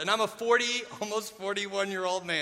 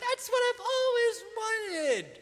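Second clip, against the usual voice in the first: voice suddenly shooting up very high, awkward. Retelling an awkward moment, the speaker quotes their past self in a really high voice. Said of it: "my voice goes really high".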